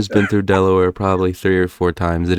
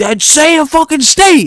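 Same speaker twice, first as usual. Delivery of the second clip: play-acted very high, loud, drawn-out hollering yell; 6 dB louder than usual. Retelling how someone yelled at them over New England: imitating someone yelling. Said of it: "he started yelling at me".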